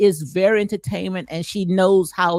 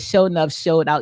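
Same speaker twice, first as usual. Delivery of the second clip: normal talking voice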